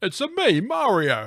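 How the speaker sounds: put-on high, drawn-out Italian accent. Answering a question about accents: Mario voice. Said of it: "Would you get him to have an Italian accent?".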